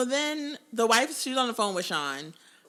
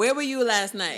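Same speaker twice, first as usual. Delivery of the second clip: ordinary delivery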